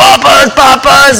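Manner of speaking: high, loud street vendor yelling call.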